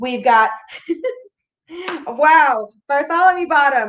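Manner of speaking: talking through laughter. Closing the night, thanking each performer by name, laughing while speaking. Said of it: "I can't I can't stop laughing".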